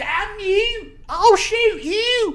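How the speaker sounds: put-on very high, drawn-out English accent. Retelling a shooting story, voicing Smith's threat to Millwood, English accent. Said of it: "English accent. I think I nailed it".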